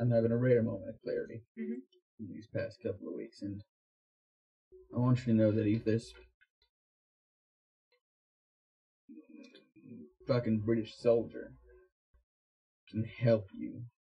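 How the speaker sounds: very quiet, hushed, confiding aside. Speaking just to Daisy, confiding something, speaking very quietly. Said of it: "I'm saying this very quietly".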